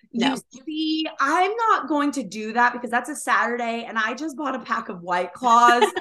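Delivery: catty, bitchy put-on tone. Retelling what a friend said about when to start: imitating a friend in a bitchy voice. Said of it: "bitch voice".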